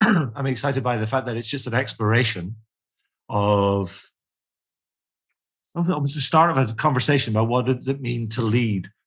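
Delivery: choked-up voice, drawn-out "of". A speaker reflecting aloud, choked up. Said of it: "And choked up, obviously".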